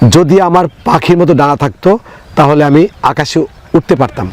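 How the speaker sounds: ordinary delivery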